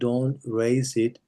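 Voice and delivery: slow, unhurried, savoring delivery. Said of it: "slow down a little bit when you speak".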